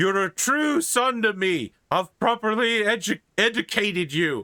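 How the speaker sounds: weepy blubbering, pitched very high. Retelling a scene from a story, voicing the man's reply: imitating a blubbering man. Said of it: "you hear a sort of blubbering man go".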